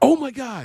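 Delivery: put-on very high voice with audible panic. Retelling a quarterback's reaction under pressure: imitating Geno Smith's panic. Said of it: "you literally heard the panic in his voice".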